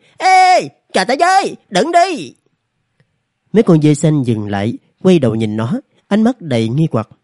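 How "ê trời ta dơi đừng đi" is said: wild, joyful, overjoyed calling out, very high. A narrator reads a character chasing after distant blue goats: overjoyed, calling out loudly. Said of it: "mừng rỡ như điên, vội đuổi theo, lớn tiếng gọi".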